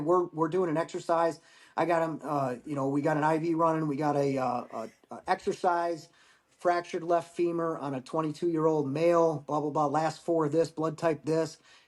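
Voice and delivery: ordinary talk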